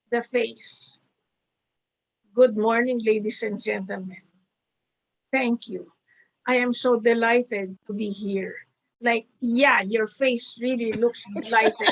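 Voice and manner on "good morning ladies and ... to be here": gloomy, defeated tone, much lower pitch. Showing listeners how a presenter's voice can fail to match the words: gloomy, defeated tone. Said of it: "The voice tone sounds like you put all your money in the stock market and it crashed".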